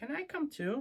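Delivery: tiny, very high-pitched, squeaky mouse voice. Reading a story, a tiny mouse asks Little Bear if it can come, squeaky tiny mouse voice. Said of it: "squeaked a tiny voice".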